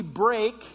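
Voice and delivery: "break" stressed, leaned on. Speaker quoting a Bible verse to listeners, stressing the word break. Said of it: "emphasis on break there".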